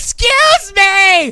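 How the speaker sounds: put-on very high, very loud, shrill drunken yell. Retelling someone on a balcony shouting at people walking below: imitating someone yelling. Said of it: "she's literally yelling at the people walking down".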